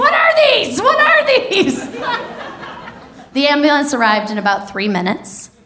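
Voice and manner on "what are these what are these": very high, frantic shout. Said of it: "she started shouting at my roommates".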